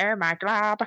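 sulky, grumpy animated-princess voice. Describing a favourite cartoon character and showing how she talks: Lumpy Space Princess voice. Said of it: "she talks like this".

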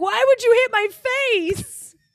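put-on really upset voice. Imagining being hit in the face while fighting, pretending to be really upset. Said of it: "And I'd be really upset".

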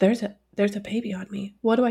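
dog character voice. Voicing the dog looking up with a baby on him: speaking as the dog. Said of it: "look at us like".

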